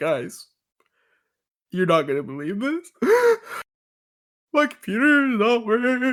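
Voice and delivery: distraught, high, tearful crying voice. Retelling how someone joined the call crying: imitating Colt crying. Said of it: "He's crying".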